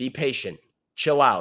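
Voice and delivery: ordinary talk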